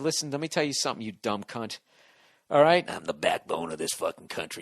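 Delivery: put-on drunk voice. Acting out someone confronting her after a few drinks, imitating someone drunk. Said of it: "come at her after you've had a few pops".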